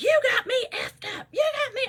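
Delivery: put-on, very high-pitched, shrill scream. Retelling a quarrel at a store, imitating someone screaming. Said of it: "she was screaming".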